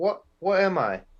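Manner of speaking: high put-on British accent. Describing a show scene where Mark turns into Steven, in a Steven Grant accent. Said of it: "Was that was that a good accent?".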